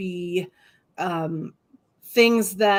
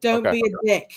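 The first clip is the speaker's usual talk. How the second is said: heavy, laid-on put-on British accent; 3 semitones higher, 3 dB louder than usual. Adding a reply to a donation message: british accent. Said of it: "I'll even say it in British".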